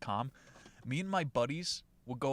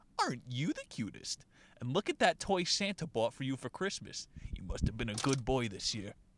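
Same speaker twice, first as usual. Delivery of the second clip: mock, utterly patronizing, over-the-top condescending sing-song. Retelling what they said to an excited man with a small megaphone: retelling a condescending tone. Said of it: "In the most condescending tone possible".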